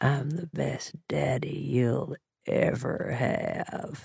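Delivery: low, hushed, half-whisper, half-growl. A man speaks to the narrator, his hand over her heart, low half-whisper, half-growl. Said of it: "he says in a low voice that's half whisper, half growl".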